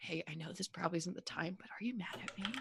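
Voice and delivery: hushed, soft half-whisper, breath only. Voicing a character who quietly asks another during a council: half-whispering in character. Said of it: "Leo will, like, whisper to Adele".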